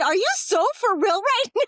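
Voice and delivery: high, incredulous, disbelieving blurted-out yell. Retelling what was yelled in a store after a crash: retelling a yell. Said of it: "I yelled that out loud in the store".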